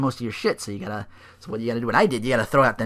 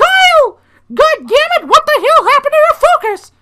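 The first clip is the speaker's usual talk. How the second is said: very high, loud, squeaky yell; 11 dB louder than usual. Imagining a game character yelling at Kyle, the speaker uses a Mickey Mouse voice. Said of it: "Cody sound had Mickey Mouse's voice".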